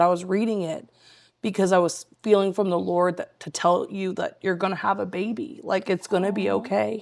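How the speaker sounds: ordinary delivery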